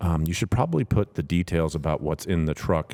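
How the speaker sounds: quiet under-breath muttering. Retelling advice someone gave while walking over, under his breath. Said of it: "under his breath".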